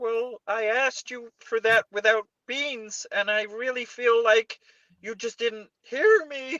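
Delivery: acted-out, very high, weepy, cracking, tearful sob. Asked to imitate a man crying over a wrong cafe order, imitating him crying. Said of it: "do him crying over the wrong order".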